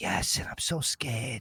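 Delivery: slow, drawn-out, hushed whisper. Retelling own reply to a question about duress: imitating own whisper. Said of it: "And then I replied in a whisper".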